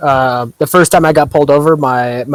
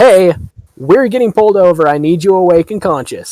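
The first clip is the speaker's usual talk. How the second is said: put-on, slightly raised, pitched-up voice; 5 semitones higher than usual. Retelling waking everyone in the car as they get pulled over, with a raised voice. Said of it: "raise my voice a little bit".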